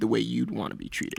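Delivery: normal talking voice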